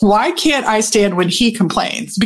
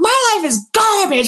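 play-acted piercing, very high-pitched shrill yell; 10 semitones higher than usual. Retelling a moment at the lake with a companion, acting out own yelling. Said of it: "And I'm yelling".

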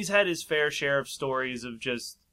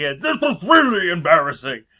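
high, loud caricatured fat woman voice. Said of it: "the cliched fat woman voice".

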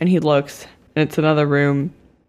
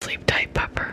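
hushed, breathy whisper under the breath. Voicing a character saying goodnight to Ajax: whispering. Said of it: "And then he looks at Ajax and whispers".

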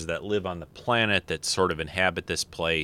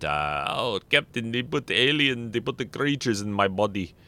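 put-on Russian accent, much higher pitch; 5 semitones higher than usual. Talking about Saru, quoting a line to the captain in a terrible Chekov accent. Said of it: "That was a terrible Chekhov accent".

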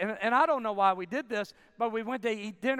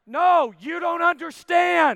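booming, insistent, loud, drawn-out yell; 7 semitones higher, 9 dB louder than usual. Recounting yelling at his wife from the back: retelling his own yell. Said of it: "Like I'm yelling at my wife".

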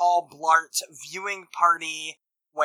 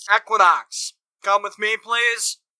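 loud, booming, pitched-up guard voice; 5 semitones higher, 3 dB louder than usual. Game narrator voicing a guard in riot gear who steps in, booming guard voice. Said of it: "he booms out".

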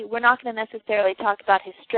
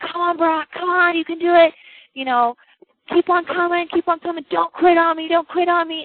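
mock yell, higher; 8 semitones higher, 3 dB louder than usual. Speaker retells a coach urging a crawling player on, retelling a coach yelling. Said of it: "And he's yelling at him".

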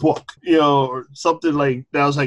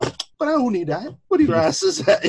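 Barbadian accent; 10 semitones higher than usual. Retelling what a dad would say about a gift: imitating dad's Bajan accent. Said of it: "his Bajan accent would come out".

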